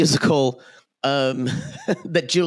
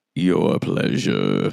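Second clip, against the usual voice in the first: very low, rough, creaky dad voice; 10 semitones lower than usual. Asked a question, answer in a daddy voice like Darth Vader. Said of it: "you were trying to do Joey's daddy voice, but it just sounded like Darth Vader".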